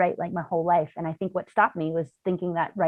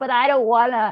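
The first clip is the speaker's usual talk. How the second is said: mock, really whiny, high, loud, dragged-out whine; 6 semitones higher, 6 dB louder than usual. Voicing the habitual inner voice that comes up when sitting down to write: imitating a whiny inner voice. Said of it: "really whiny".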